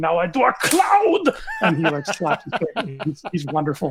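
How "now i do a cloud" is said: put-on high, slow, all-out German accent. Imitating the painter who trained Bob Ross: William Alexander full German mode. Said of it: "full-blown German mode".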